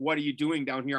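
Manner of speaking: ordinary talk, nothing marked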